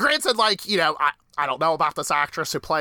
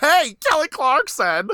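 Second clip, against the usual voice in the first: mock very high, loud, sneering jeer; 12 semitones higher, 5 dB louder than usual. Retelling how a character made fun of Haley: imitating a mocking taunt. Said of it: "She's like".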